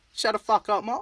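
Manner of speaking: bad put-on Australian accent. Speaker addressing aussie listeners attempts a line: shitty fake aussie accent. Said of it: "our shitty Aussie accents".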